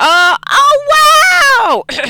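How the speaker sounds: very high, very loud excited shout. Playing a game and finding the flashlight button, the speaker is yelling excitedly. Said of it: "Sorry, I'm yelling".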